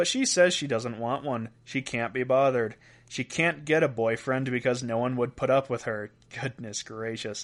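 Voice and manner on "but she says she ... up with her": ordinary talk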